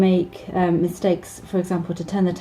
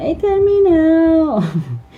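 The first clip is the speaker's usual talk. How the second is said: put-on very high, loud, whiny little-kid voice; 10 semitones higher, 6 dB louder than usual. Explaining phrases Spanish children say, the speaker imitates one in a whiny voice. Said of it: "You get that kind of whiny voice as well with Spanish children".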